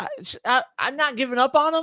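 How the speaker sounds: pitch climbing upward. Defending not giving up on a player during a league argument, voice getting high. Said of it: "Your voice is getting high".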